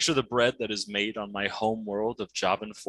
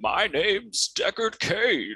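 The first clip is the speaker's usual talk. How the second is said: put-on weak, high old man voice, slow and drawn out; 10 semitones higher than usual. Giving a couple of lines as his character, in Deckard Cain voice. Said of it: "that's the voice that's saying this right now... This is my voice. It's an old man. He's weak".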